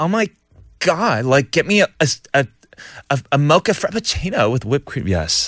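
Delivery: fancy, posh put-on comedy sketch accent. A host reading a listener's message about a late-night host, imitating Jimmy Fallon's sketch accent. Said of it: "in a very nice Accent".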